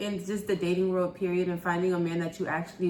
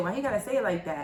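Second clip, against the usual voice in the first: ordinary delivery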